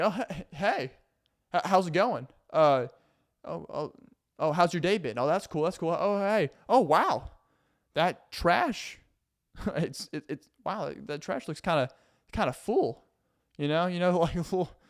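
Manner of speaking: play-acted, stammering, passive-aggressive hinting tone. Acting out a roommate hinting that the trash is full: imitating a passive-aggressive roommate. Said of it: "you live with a passive aggressive roommate".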